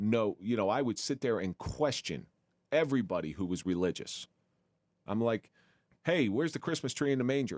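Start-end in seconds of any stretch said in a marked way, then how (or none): 6.0-7.6 put-on snarky, needling tone, pitched up. Retelling own past jabs at religious people: imitating own snarky remark. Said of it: "It's like real snarky shit".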